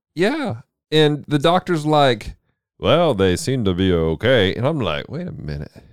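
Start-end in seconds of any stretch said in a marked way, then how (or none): 2.8-4.6 radio-announcer style voice. Retelling a scene where the doctor comes in, voicing the doctor's radio voice. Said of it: "Sounds like a nice radio voice".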